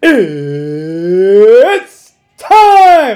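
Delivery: very loud, belted announcer voice, "It's" drawn out. Showing how the announcer calls it: Bruce Buffer impression. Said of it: "That's a pretty good impression".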